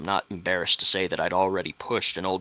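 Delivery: ordinary delivery, nothing marked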